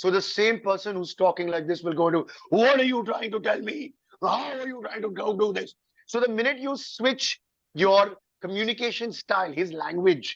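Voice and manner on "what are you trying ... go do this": intimidating, forceful, scary, strong hero voice. Explaining how a character's voice changes in costume, demonstrating a scary, strong Batman voice. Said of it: "It becomes scarier, it becomes stronger".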